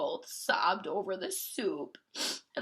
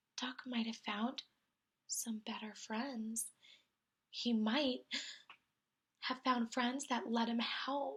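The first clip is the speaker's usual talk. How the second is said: small, sorrowful, hushed half-whispered voice; 3 semitones higher, 7 dB quieter than usual. Reading a story, the cat speaks in a sad little half-whisper. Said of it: "the cat whispered in a sad, sad little voice".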